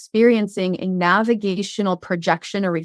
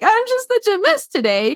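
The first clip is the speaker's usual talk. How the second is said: very high, quavering, wobbly, trembling voice, acted out; 13 semitones higher than usual. Imitating a best friend who comes in after crying for hours, with a shaking voice. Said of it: "their voice is shaking like".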